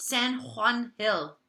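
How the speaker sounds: Spanish pronunciation. Speaker showing a listener how to say a Spanish place name, Spanish pronunciation. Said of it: "H sound because it's Spanish".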